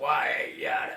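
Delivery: very deep sailor voice, dropped way down. Explaining how a cartoon sailor talks, then doing his voice: Popeye voice. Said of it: "his voice is all down here".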